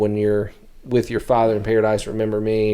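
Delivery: ordinary delivery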